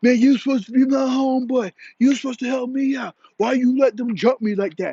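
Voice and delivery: high, shouted, accusing yelling complaint. Retelling a fight, imitating a guy yelling at the security guard. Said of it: "He's yelling at the security guard".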